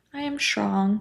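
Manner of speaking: limp, unconvincing, weak and feeble voice. Example of saying an affirmation without embodying it, in a weak voice. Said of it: "but in a weak voice, like".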